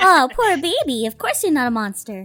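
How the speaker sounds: overly sweet soothing tone. Placating him before offering candy, in an overly sweet placating tone. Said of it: "I placate him with an overly sweet tone".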